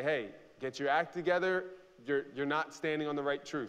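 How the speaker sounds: normal talking voice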